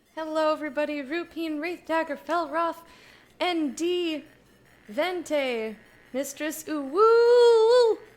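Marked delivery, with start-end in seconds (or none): 6.1-8.0 high, loud, very slow stretched-out name. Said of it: "don't know why I said it like that".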